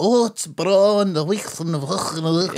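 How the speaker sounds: exaggerated, high, affected, old-fashioned broad Scots accent. Mocking people who put on old-fashioned Scots: mocking affected old-fashioned Scots. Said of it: "it's like an affected thing".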